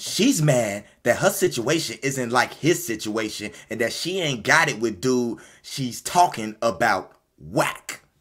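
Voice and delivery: very slow, drawn-out put-on woman's voice. Quoting what Bianca said about someone: Bianca Tate voice. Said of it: "let me get my Bianca Tate voice".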